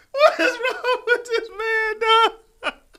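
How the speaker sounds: hard laughing, high and loud with disbelief.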